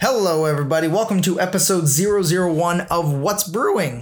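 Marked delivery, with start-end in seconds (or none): 0.9-4.0 cracked voice breaking mid-line. Opening the first episode of a new coffee podcast, voice cracking. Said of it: "Was that a voice crack?".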